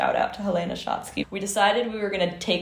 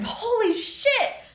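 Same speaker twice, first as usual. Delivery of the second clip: high, drawn-out scream. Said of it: "he just screamed".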